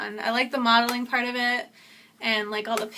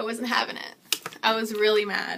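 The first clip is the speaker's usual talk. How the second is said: usual speaking voice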